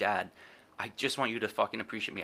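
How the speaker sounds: acted-out sobbing, crying plea. Retelling begging a father on hands and knees: retelling a crying plea. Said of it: "literally crying, saying".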